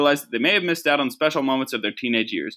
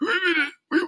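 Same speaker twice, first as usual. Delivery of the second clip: very high, parched, dry, raspy cartoon voice. Imitating how a woman's voice sounded to you, like SpongeBob when he needed water. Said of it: "She sounded like when SpongeBob needed water".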